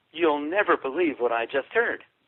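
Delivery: normal talking voice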